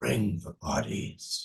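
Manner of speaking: ghostly, eerie, hushed, barely-there whisper. Game master voices a voice heard in a character's mind: whispered voice. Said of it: "a whispered voice".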